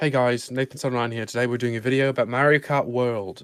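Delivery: light, put-on Australian accent with slight twang. Asked to show the accent, the speaker does a video intro in an Australian accent. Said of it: "show us your accent".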